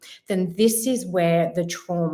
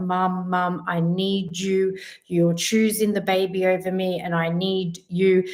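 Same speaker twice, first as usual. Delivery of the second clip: put-on pleading, needy, begging child voice. Retelling a dream where the daughter pleads: imitating a child begging. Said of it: "she was begging me, she's like".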